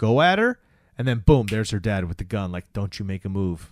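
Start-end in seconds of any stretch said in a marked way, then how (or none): 2.7-3.7 put-on menace, lower and quieter. Retelling a scene, the speaker acts out a girl's dad holding a gun: mock-menacing threat. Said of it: "that's the attitude".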